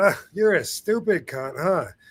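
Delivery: relaxed, easygoing, offhand throwaway tone. Retelling own past words, showing how they were meant: casual, offhand tone. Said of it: "I'm saying it just like that".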